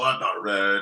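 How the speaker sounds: ordinary talk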